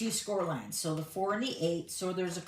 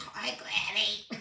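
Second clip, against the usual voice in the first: froggy, hoarse, croaky voice. Describing how Grippy sounds with laryngitis, imitating Grippy's hoarse voice. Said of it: "He's got a frog in his throat".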